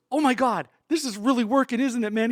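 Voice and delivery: put-on, very high, loud, big-kid excited gush. Retelling how Drew ran offstage after the first bit: imitating Drew, so excited. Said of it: "so excited, like a big kid".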